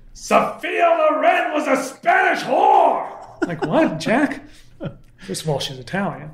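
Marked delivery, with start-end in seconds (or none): 0.2-3.5 put-on very high, slow, drawn-out furious New York accent.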